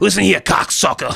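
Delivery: pushed high, rough-edged, raspy voice. Doing a quick impression while talking about a comedian: Joey Diaz impression. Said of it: "I can do a good impression".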